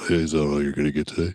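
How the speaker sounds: imitated very deep voice. Tell your kids' story of the person at the register, imitating a very deep voice. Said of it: "fucking Johnny Deep voice over here".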